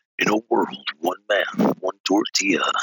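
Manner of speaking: deep, low movie-trailer narrator voice. Showing an old movie trailer voice: Don LaFontaine movie trailer voice. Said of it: "good at that Don LaFontaine".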